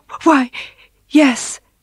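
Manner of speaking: stammering. Mrs. bixby answers her husband about the fur, stammering. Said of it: "she stammered".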